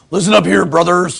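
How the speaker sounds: loud, rough, barking wrestler bellow. Retrying the wrestler voice after being corrected: Hulk Hogan impression. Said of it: "Is that better?".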